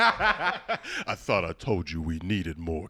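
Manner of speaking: put-on deep cartoon voice. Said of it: "It's like a real deep voice".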